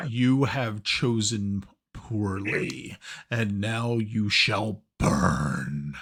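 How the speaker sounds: menacing, grand dragon voice, drawn out. Voicing a dragon heard like a loudspeaker above the city: loud booming dragon voice. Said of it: "the dragon actually speaks in a very loud and booming voice".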